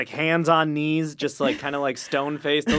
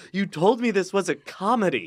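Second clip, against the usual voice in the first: play-acted tearful sobbing, talking through tears; 4 semitones higher than usual. Retelling what mom said while sobbing after a movie: imitating mom sobbing. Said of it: "my mom is just sobbing".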